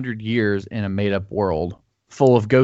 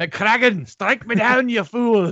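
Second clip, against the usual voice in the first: put-on Scottish villain voice, higher; 11 semitones higher than usual. Riffing on a Star Wars line as a Scottish Palpatine voice. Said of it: "Scottish Palpatine".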